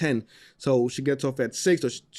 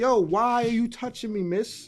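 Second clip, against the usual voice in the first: put-on high, tearful, whimpering crying baby voice; 8 semitones higher than usual. Retelling how the baby reacted when picked up: imitating a crying baby. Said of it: "He dead started crying".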